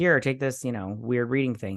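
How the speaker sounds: plain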